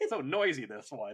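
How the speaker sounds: normal talking voice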